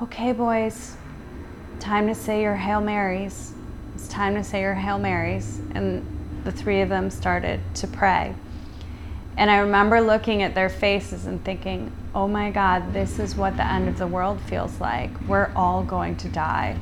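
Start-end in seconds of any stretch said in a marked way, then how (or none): 0.0-5.6 very calm, gentle, soft soothing voice. Speaker quotes what she said to the boys, imitating her calmest voice. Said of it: "in her calmest voice".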